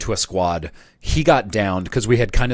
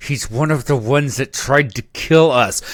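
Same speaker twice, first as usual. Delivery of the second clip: put-on gritted teeth, louder, slower; 5 semitones higher, 3 dB louder than usual. Speaker imitating the listener's reply during a game, mock speaking through gritted teeth. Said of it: "through gritted teeth".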